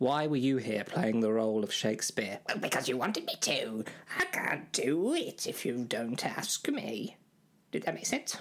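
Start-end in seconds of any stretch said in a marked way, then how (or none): 2.5-7.2 swooping fairy-tale character voice, pitch all over. Answering when called over as Shakespeare: Rumpelstiltskin voice. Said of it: "sounded a lot like Rumpelstiltskin".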